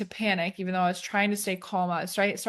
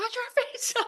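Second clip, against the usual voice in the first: put-on yell, very high-pitched and urgent. Retelling yelling at a friend who was struggling in the waves, imitating a yell. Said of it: "I yelled at my friend, I'm like".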